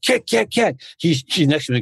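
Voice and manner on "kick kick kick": mock yell, pitched way up high. Retelling coaching students beside another coach, re-enacting a yell. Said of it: "And I'm yelling".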